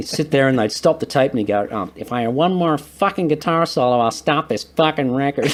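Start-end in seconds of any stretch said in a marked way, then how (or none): 2.0-5.5 imitated nasally voice. Retelling what a man said in the studio during solos, imitating a nasal voice. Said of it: "he had this really nasally voice".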